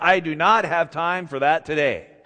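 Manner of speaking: play-acted stern, firm, no-nonsense tone. Retelling a remark made while running out of the office, mock-stern voice. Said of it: "i said to him in a stern voice".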